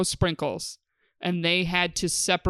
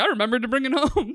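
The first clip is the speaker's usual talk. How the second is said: mock proud voice, much higher; 6 semitones higher than usual. Speaker retelling their dad's reply, imitating dad being proud. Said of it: "he was all proud".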